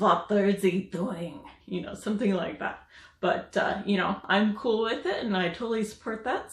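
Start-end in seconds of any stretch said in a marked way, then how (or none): 0.0-1.4 thick, heavy, laid-on German accent. Imagining how somebody with a heavy German accent would say it, heavy German accent. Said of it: "somebody with a heavy German accent".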